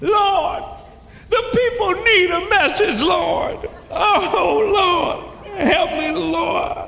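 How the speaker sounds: loud anguished cry. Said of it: "I just start crying to the Lord".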